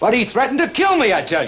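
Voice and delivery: loud yelling. Complaining to the sheriff about a death threat: shouting. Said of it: "Will you quit shouting?".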